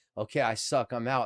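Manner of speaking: ordinary talk, nothing marked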